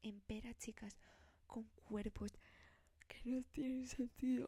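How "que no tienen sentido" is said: words pushed through a yawn, halting. Talking to her audience, the speaker yawns mid-sentence: yawning while talking. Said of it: "perdón, que estoy bostezando".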